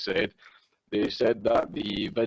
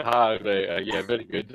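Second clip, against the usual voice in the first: acted-out chuckling, laughing, amused delivery; 3 dB louder than usual. Retelling their reply to police at the arrest: imitating own laughing reply. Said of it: "I started laughing, like".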